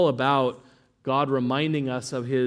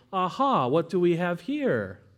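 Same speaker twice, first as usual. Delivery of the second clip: taunting, sneering, mocking sing-song, pitched up; 5 semitones higher than usual. A speaker voices how the nations come to Babylon: putting on a mocking tone. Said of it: "captures that kind of mocking tone".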